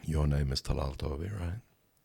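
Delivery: put-on gentle, soft-spoken voice. Retelling what a soft-spoken man said to him: imitating a soft-spoken voice. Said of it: "softly spoken voice I'd ever heard".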